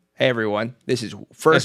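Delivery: dull, boring, unexciting delivery. Attempting the podcast episode intro again, boring delivery. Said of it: "That's way too boring".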